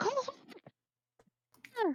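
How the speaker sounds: very high calling-out shout. Player's character calls to the warg after feeding it: yell. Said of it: "I'm going to yell".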